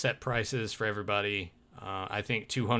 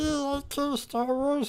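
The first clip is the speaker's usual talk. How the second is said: put-on obnoxious voice, higher pitch. Voicing a dislike of Kenner Star Wars: Joe's stupid voice. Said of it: "however Joe does that stupid voice".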